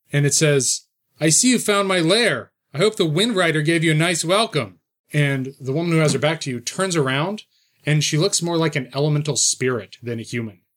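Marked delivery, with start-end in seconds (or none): 1.2-4.8 put-on young man's voice. Voicing a figure speaking from further into the tunnel, in a youthful male voice. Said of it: "it's kind of this youthful male voice".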